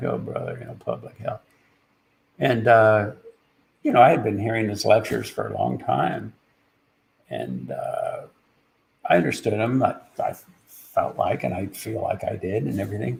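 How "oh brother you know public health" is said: very quiet, mock polite, weary, exasperated mutter. Retelling a speaker's subtle reaction to a question: imitating a polite exasperated aside. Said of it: "It was polite, but it was also like".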